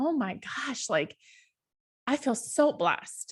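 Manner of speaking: voice catching with emotion. Speaker recalling a morning on the beach, getting emotional. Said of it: "I promised I wouldn't get emotional".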